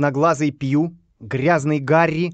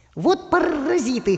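very high croaking parrot voice; 13 semitones higher than usual. Narrator reads a parrot circling over its master's head; croaking parrot. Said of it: "прокаркал попугай".

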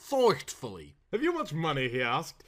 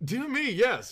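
careless, offhand, casual throwaway tone, pitched up; 8 semitones higher than usual. A narrator reads the earl's reply to Mr. Saltina, careless. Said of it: "remarked the earl carelessly".

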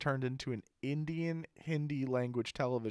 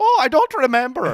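stock exaggerated Irish accent; 12 semitones higher, 18 dB louder than usual. Retelling how the mother in a movie answered: stereotypical irish accent. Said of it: "stereotypical Irish accent".

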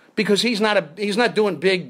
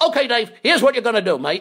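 attempted Australian accent; 4 semitones higher, 3 dB louder than usual. Retelling what the Australian assistant director told him, in an attempted Australian accent. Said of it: "I can't do an Australian accent. He said, but I'll try".

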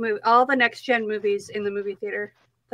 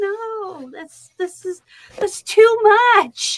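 very high, drawn-out, tearful mock sobbing wail; 10 semitones higher, 5 dB louder than usual. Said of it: "literally sobbing".

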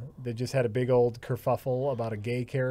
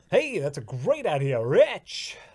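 loud, swooping put-on game show host voice; 4 semitones higher, 5 dB louder than usual. Chatting with Rich while they set up, in a game show host voice. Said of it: "Why do you sound like a game show host?".

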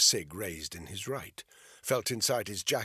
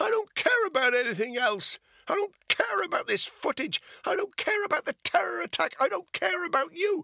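shrill, very high, loud shouting; 6 dB louder than usual. A woman confronts a man who stands there without moving: shouted. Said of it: "Bethany shouted".

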